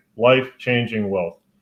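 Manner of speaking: ordinary talk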